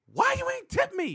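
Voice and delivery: shrill, very high, demanding yell at full volume. Speaker retells a woman in the club shouting at them face to face; retelling a shout. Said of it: "she just shouted out".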